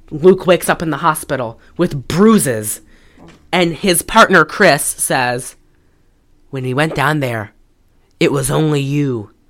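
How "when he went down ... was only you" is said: put-on 70s Mexican-accented cop voice, lower. Recapping a movie, quoting the hero's partner in a 70s Mexican cop voice. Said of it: "he says it like a 70s cop, like 70s Mexican cop".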